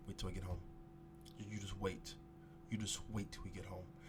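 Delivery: put-on whisper. Retelling how a mother warned a child when serious: imitating mom's whisper. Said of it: "she would just whisper".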